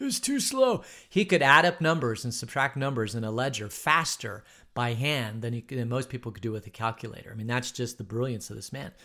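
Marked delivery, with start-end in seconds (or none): 0.0-0.8 put-on rasp, pitched way up, very high. Retelling what he said to the speaker's brother-in-law, in a raspy voice. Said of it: "he had that kind of a raspy voice".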